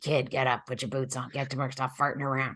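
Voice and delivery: put-on grumpy, cranky old man voice. Explaining a tarot card, the speaker voices the old man in their head: cranky old man voice. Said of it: "it's like an old man voice in my head going".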